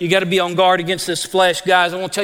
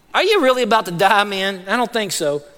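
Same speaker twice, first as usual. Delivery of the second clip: usual speaking voice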